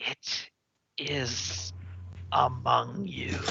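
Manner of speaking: faint, breathy whispery voice. The game master voices a last voice inside a player's head: whispery voice. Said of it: "one last whispery voice inside your head".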